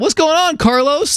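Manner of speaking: high, cheery, nosy neighbor voice calling out.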